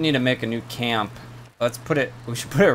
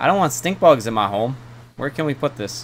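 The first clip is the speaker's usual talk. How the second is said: ordinary talk, nothing marked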